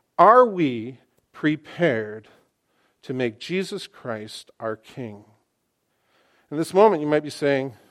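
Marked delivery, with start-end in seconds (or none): 0.2-5.3 slow, measured, deliberate, each word emphasized. Repeating a question to everyone listening, a little more slowly. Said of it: "Let me say that just a little bit more slowly".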